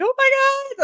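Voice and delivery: mock alarmed, very high-pitched outburst. Retelling seeing a boy spray Windex in his mouth: retelling own past panic. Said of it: "freaking out".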